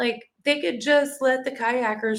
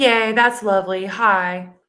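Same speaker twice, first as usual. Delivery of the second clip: annoyed, fake tone, loud and drawn out; 2 semitones lower, 5 dB louder than usual.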